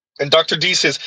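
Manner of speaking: normal talking voice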